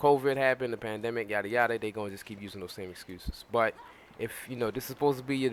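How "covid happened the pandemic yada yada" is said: ordinary talk, nothing marked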